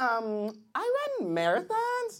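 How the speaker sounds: put-on comic swooping, sing-song valley-girl style voice.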